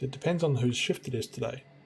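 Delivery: ordinary delivery, nothing marked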